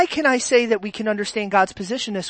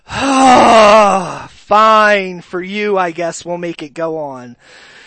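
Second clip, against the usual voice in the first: dramatized, exasperated almighty voice, "oh" stretched; 2 semitones lower, 8 dB louder than usual. Retelling the story of Noah, dramatized exasperated God voice. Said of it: "I'm dramatizing God".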